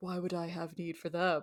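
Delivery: hushed, grave, solemn tone. Describing a male character to a friend, the speaker quotes him in a mock-solemn voice. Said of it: "solemn voice".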